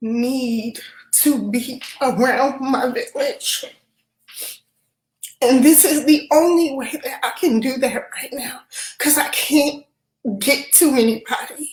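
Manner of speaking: crying speech with the word need drawn out. Opening up about needing the people she loves, speaking while crying. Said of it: "So I did not intend to be crying".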